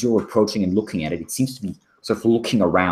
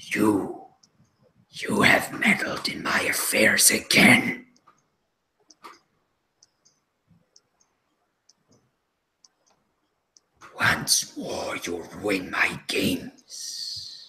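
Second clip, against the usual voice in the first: words hissed out in a hissing voice; 3 dB quieter than usual. Narrating a mysterious voice heard in the mind, hissing voice. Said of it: "the voice hisses".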